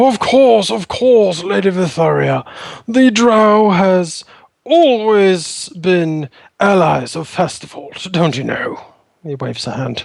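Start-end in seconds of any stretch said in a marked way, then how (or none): 0.0-8.8 pompous gnome voice, higher-pitched. Game master voicing a gnome lord answering Lady Vytharia's request for an audience: pompous Lord Gurney voice. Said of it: "the gnome lord nods pompously".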